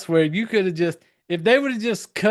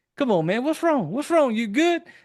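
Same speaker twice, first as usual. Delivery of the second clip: mock soothing, consoling tone; 7 semitones higher than usual. Retelling how a popular school kid consoles an upset classmate: imitating a comforting voice. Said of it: "put his arm around you and be like".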